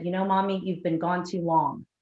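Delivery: normal talking voice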